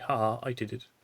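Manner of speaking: normal talking voice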